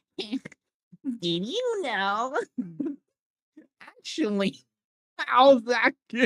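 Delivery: put-on very high, sing-song, swooping little-kid voice. Speaker acts out their young self going up to people: high-pitched child voice. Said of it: "high pitched voice".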